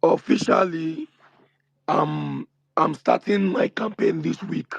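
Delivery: creaky, hoarse, worn-out voice.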